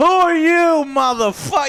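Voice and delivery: shrill, booming, very loud, high menacing yell. Retelling a film scene of a father at the door: imitating someone scaring a visitor. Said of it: "he's trying to scare the guy".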